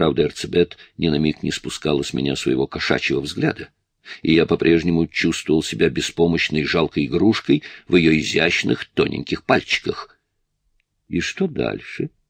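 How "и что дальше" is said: sardonic, amused, mocking and teasing tone. A woman watching him finish his exercises asks him: mocking question. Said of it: "насмешливо спросила она".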